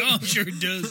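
put-on doubtful, unconvinced, disbelieving, skeptical tone. Imitating another speaker's reply about the book: imitating Tim's disbelief. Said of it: "Tim's disbelief in the ability of a book".

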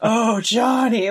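put-on deep demon voice. Imitating a movie character calling for her lover: deeper demon-like voice. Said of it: "her voice gets deeper, almost like she's like a demon".

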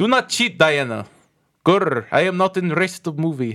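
put-on Russian accent on English words. Joking about a Wonder Woman movie, addressing Diana in a Russian accent. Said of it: "I don't know why I'm Russian".

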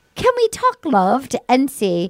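slow, drawn-out, sing-song, put-on fake British accent. Retelling what he said after she announced she was leaving: fake british accent. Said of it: "with his fake British accent".

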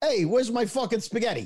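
put-on, laid-on Italian-American Brooklyn accent. Showing how another person does an italian accent: mock brooklyn italian accent. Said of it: "When he does, it's like, ... He's got that Brooklyn".

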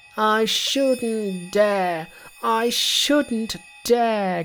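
groaning. A disciple answers his master about the spell, groaning. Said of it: "Groaned Monkey".

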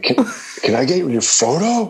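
very high, eager, excited put-on little-kid voice. Retelling a kid approaching outside a coffee shop for a photo, imitating an excited kid. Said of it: "And he was like all excited".

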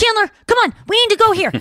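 high-pitched, quick, sped-up sitcom-style voice. Showing how a character sounded in sped-up reruns: imitating Monica from Friends. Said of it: "where she talked like this".

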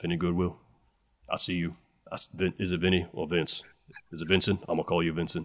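very low, hushed, stumbling, very soft voice. Showing another speaker a Shaq impression. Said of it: "my Shaq impression would be more like this".

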